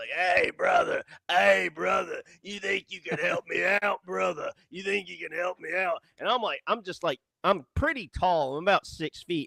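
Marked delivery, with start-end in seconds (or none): 0.1-6.0 chummy, leaning-in friendly voice. Retelling how a stranger asked for help in a Wolfman Jack voice. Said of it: "he's kinda got this Wolfman Jack voice".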